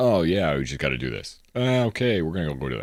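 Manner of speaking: deadpan, dry and low put-on voice, trailing off. Showing how a YouTuber talks: deadpan Let's Game It Out impression. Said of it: "his voice is kind of slightly deadpanned".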